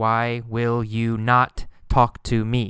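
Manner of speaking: normal talking voice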